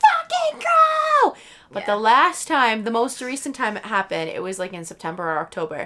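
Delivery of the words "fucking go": shrill, very high scream, "go" stretched out. Recalling screaming at people with the car windows down, retelling a scream. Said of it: "I've screamed at people being like".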